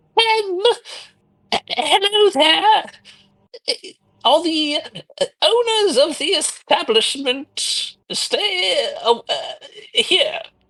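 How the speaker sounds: tiny, small, very high little voice. Narrator voicing an unseen speaker heard in the inn, in a small voice. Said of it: "you hear a small voice say".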